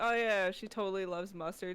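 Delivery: dry, sarcastic, fake agreeable tone. Retelling own past remark about a character loving mustard: imitating own sarcastic remark.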